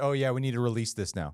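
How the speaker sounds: usual speaking voice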